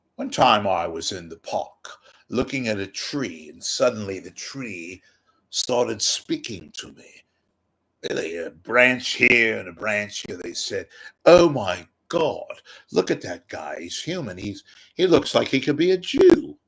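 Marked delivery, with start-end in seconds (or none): 11.3-16.4 high, cool-sounding put-on British accent. Telling of a park tree speaking to him, voicing the tree: British accent. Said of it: "Again, it's a British accent".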